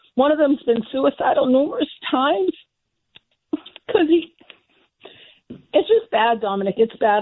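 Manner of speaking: distressed, heartfelt, upset emotional delivery. Telling dominic about a suicidal blind friend, getting upset. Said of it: "I'm sorry I'm getting upset".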